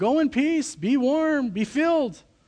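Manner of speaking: high, very slow, empty-sounding sarcasm. Quoting the dismissive words to the needy: imitating a sarcastic dismissal. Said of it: "James is kind of saying this sarcastically".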